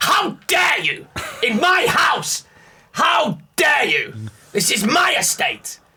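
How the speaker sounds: put-on angry bark, very high and very slow. Doing an impression of him losing it, imitating Lord Grantham's angry bark. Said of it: "I can do the best impression of him now. I love it when he barks and loses and goes".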